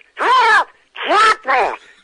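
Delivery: high, loud cartoon duck voice. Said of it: "did the voice of that duck".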